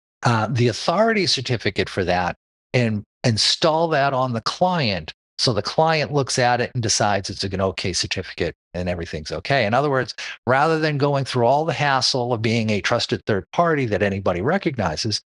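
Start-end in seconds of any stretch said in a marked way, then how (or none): none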